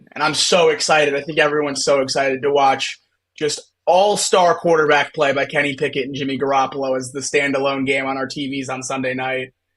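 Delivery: ordinary delivery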